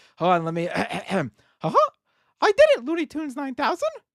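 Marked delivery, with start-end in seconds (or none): 2.4-3.9 squeaked out quickly in a high pitch. After being asked to do the voice, the speaker finally gets it: Mickey Mouse voice. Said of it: "do your Mickey Mouse voice".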